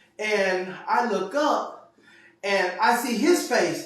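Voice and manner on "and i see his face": ordinary talk, nothing marked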